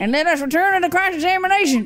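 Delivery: put-on Canadian-southern accent blend. Voicing a courtroom game's dialogue aloud, in a weird Canadian-southern accent mix. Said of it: "weird combination of a stereotypical Canadian accent and a southern accent".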